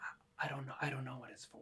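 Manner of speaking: very quiet, hushed half-whisper. Retelling own reply to a daughter during Mass: retelling own half-whisper. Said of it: "I'm whispering, trying to keep her quiet".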